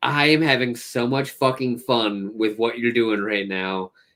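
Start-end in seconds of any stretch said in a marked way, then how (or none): none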